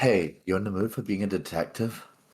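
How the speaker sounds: whispering. A player's character signals Aiden over to ask him something; whispering. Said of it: "I'm gonna whisper".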